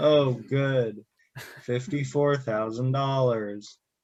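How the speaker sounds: sarcastically excited. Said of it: "a sarcastically excited, uh, solitaire ad".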